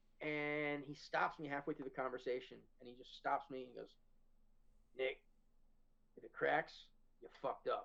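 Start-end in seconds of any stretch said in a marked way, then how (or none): 5.0-7.9 put-on stern voice. Retelling how Craig stopped him halfway through explaining, doing Craig's stern voice. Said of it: "I use his voice because like Craig has his voice".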